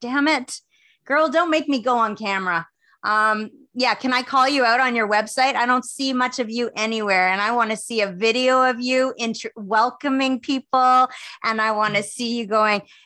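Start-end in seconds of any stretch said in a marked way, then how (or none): 0.0-2.7 pitched-up, squeezed through gritted teeth. Imitating someone gritting her teeth about going on camera: imitating Bonnie Jean through gritted teeth. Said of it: "she's gritting her teeth".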